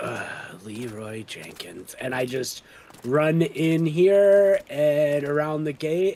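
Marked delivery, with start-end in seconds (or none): 0.0-1.9 low, grudging, begrudging mumble, half to oneself. Voicing a character about to charge at pirates: begrudging mutter. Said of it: "I mutter to myself, uh, begrudgingly".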